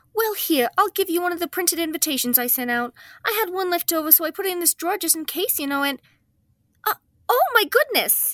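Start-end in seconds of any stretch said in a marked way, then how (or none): 6.9-8.4 high, swooping, upset, distressed exclamation. A woman discovers the party invitations she forgot to mail, distressed. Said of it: "You sound... distressed".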